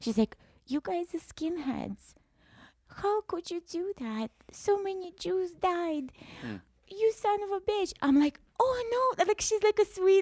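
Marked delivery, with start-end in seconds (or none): 0.7-7.9 put-on weepy old-lady voice, soft crying. Retelling a crying old lady on a bus pointing at them, imitating an old lady crying. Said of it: "just like pointing at us and crying".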